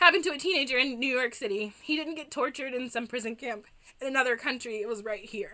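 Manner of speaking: normal talking voice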